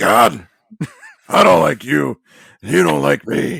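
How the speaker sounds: rough, high bellow. Retelling a family prayer in the Vince voice: Vince McMahon voice. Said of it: "his Vince voice".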